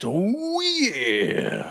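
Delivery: very high-pitched, swooping cry in wrestler style. Hyping a pillow fighting event: Randy Savage voice. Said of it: "That's my best Randy Savage".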